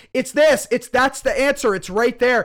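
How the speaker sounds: full-on shrill screaming, very high and very loud. Describing knowing a puzzle's answer already, the speaker is acting out screaming. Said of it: "you're sitting there screaming and going".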